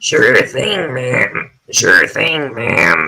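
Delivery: small buzzing, buzzsaw-like voice. Speaker imitates a little slug-like character's line in a buzzsaw voice. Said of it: "He's got this like buzzsaw voice".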